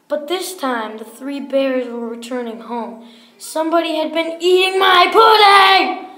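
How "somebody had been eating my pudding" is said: great big, loud, booming storybook voice. Narrator reading the three bears story as the bears return home: Papa Bear voice. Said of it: "said Papa Bear in his great big voice".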